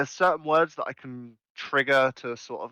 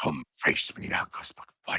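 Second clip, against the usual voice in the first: deep, raspy character voice, much lower; 11 semitones lower, 5 dB quieter than usual. Showing how he voices a character's line to Angus McFine, deep, raspy voice. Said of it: "trying a bit more raspy".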